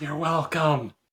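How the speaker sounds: soft, hushed half-whisper. Voicing a character who steps back and speaks to Vercule: half-whispering in character. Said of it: "whispers to Vercule".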